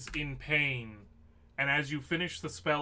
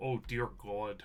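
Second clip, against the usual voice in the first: put-on muttered voice, lower and quieter; 5 semitones lower, 5 dB quieter than usual. Voicing a character reacting to a bad roll: Martin Luther muttering under his breath. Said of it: "under his breath".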